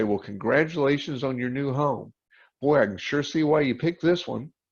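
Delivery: plain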